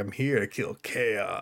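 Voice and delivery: very hushed, low, gravelly, chill tough-guy rasp. Imitating an actor after describing his voice: Vin Diesel impression. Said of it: "So he's like".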